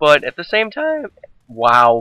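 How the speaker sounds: badly cracking voice, breaking on the word. Recommending a subtitled thriller movie: voice cracking badly. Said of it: "my voice is cracked really bad right there".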